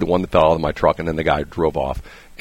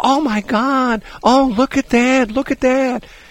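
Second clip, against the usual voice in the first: very high, slow, gushing voice. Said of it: "all of a sudden they go".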